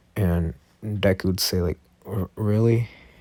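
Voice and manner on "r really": nervous, stammering tone, tripping on the r. Describing a scene, the speaker voices Deku's reply in a nervous Deku voice. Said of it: "with like a nervous a nervous like tone".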